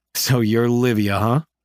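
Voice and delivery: ordinary delivery, nothing marked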